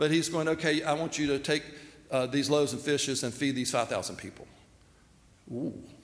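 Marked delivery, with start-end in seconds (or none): none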